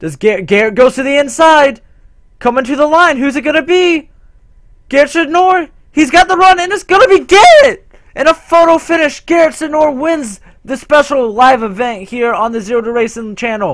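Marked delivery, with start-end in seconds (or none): 2.4-11.3 race-announcer excitement, swooping, voice breaking and cracking. Calling a photo finish live on a racing channel, excited with voice cracking. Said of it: "sorry for the voice crack".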